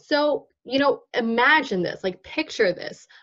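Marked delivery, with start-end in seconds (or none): none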